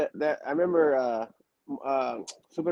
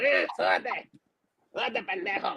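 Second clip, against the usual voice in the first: put-on soft, wild little devil-like urging voice; 4 semitones higher, 5 dB quieter than usual. Retelling a wrestling trainer's order to climb: impression of Super Mojado. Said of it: "He's like a little Tasmanian devil".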